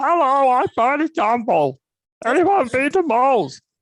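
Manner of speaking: very high, slow, swooping, sing-song cartoon voice. Recalling having fun in a queue throwing in Simpsons voices, do a Barney Gumble voice. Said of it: "I could do some of the voices of the Simpsons".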